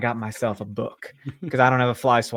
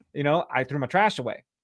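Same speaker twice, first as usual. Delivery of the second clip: plain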